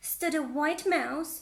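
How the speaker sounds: plain reading voice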